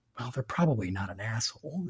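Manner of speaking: hushed, soft half-whisper under the breath. Retelling being cut off while driving: retelling a half-whisper. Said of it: "I whispered".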